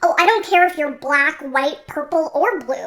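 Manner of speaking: high, loud, mocking put-on parody voice. Speaker quoting a racist person trying not to sound racist, high-pitched mocking voice. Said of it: "[high pitched]".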